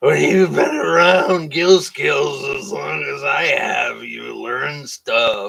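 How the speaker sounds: boozy fake drunk talk. Replying to a question, in a put-on drunk voice. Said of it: "I got to say that in my drunk voice".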